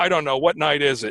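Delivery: ordinary talk, nothing marked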